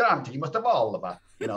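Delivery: put-on very strong Italian accent. Grant quotes a man who kept pushing him musically, imitating a very Italian accent. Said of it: "in his uh, very Italian accent".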